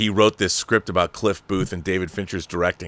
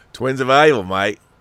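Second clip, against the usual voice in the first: put-on Australian accent, Australian-style delivery; 3 semitones higher, 3 dB louder than usual. Asked how they'd say a film title in australia, australian accent. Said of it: "how would they say that in Australia?".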